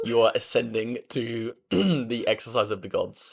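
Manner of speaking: voice cracks mid-line on a word. Cutting in to praise the other speaker's switch to calisthenics: voice cracking. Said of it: "timestamp voice crack".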